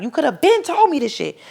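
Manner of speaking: screamed out, very high-pitched. Retelling a fight, repeating what the speaker kept screaming at him: retelling a scream. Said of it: "I would kept screaming like".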